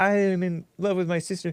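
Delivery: affected, put-on high-pitched voice. Imitating a man's line from a movie: put-on high-pitched voice. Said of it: "He's all high pitched voice".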